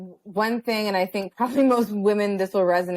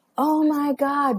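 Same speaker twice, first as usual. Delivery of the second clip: mock scream, higher; 6 semitones higher than usual. Retelling how he started screaming at the top of his lungs: imitating someone screaming. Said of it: "literally screaming".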